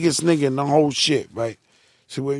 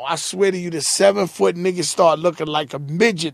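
ordinary delivery

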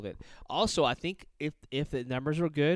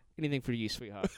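charming, full put-on British accent. Retelling how a man answered a request for a picture: imitating British charm. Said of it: "He does this whole, like, British charm".

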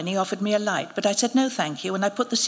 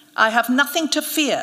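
grand, proud, pitched-up announcing tone with a flourish; 5 semitones higher, 4 dB louder than usual. The priest, asked if he is afraid, throws down his cigarette, announcing. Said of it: "he announced".

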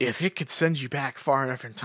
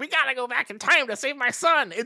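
put-on cranky, crotchety old-man voice, pitched high; 12 semitones higher than usual. Retelling an old man appearing at the door: imitating a cranky old man. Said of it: "super cranky".

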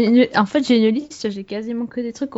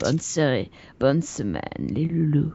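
fake sexy voice, lower and quieter; 7 semitones lower, 5 dB quieter than usual. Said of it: "quand on prend sa sexy voice".

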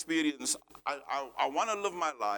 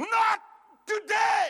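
very high, shrill scream at the top of the lungs; 7 dB louder than usual. Retelling shouting again at the man who turned and stared: retelling a scream at the top of one's voice. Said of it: "loud on the top of my voice, I screamed out and I shouted".

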